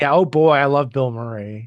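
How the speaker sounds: sarcastic enthusiasm. Joking about an actor's recent films: sarcastic. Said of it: "That was sarcastic, if you couldn't tell".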